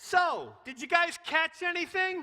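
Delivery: very high, very loud, sarcastic yell. Retelling the fishing story, the speaker acts out Jesus calling to the boat, mock-sarcastic. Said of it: "I can imagine Jesus being a, a, a little sarcastic".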